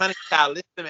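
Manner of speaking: high, small little voice. Trying again at an impression of Brittany, speaker goes for her little voice. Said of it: "I gotta get that little voice that you did".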